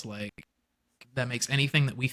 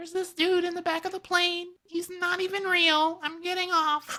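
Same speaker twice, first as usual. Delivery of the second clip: acted, very high, frantic breakdown-style screaming rant. Retelling a viral video of a woman's apparent breakdown on a plane, imitating a woman screaming. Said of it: "she's screaming, yelling".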